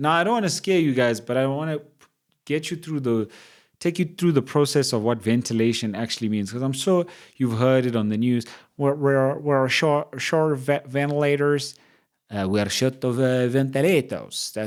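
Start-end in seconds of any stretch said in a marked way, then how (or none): 8.8-14.5 slow, dubious, halting put-on Italian accent. Explaining ventilators to listeners, quoting the news in an attempted Italian accent. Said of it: "supposed to be an Italian accent".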